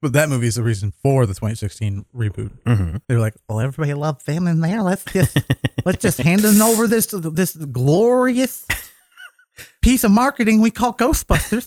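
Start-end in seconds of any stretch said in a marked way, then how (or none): 3.5-11.7 fake effeminate Southern accent, much higher. Imitating movie studio people, in an effeminate Southern accent. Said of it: "Why do they have an effeminate Southern accent".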